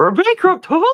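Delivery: put-on cartoon mouse voice. Speaker tries a voice to joke about recent Disney news, doing a Mickey Mouse voice. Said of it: "maybe I can do a Mickey accent".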